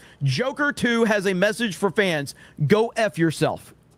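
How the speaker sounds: ordinary talk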